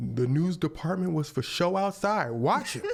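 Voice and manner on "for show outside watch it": ordinary talk, nothing marked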